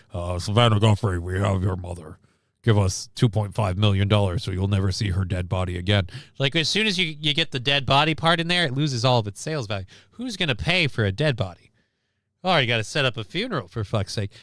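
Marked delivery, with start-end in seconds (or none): 0.4-6.1 put-on voice-modulator voice, much lower. Speaker acts out the kidnappers' ransom call, voice-modulator kidnapper voice. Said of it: "they use the voice modulator the whole bit".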